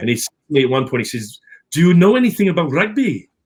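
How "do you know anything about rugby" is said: put-on Welsh accent with the pitch raised. Retelling a question a man once asked him, in a Welsh accent. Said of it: "he had this lovely Welsh accent going on".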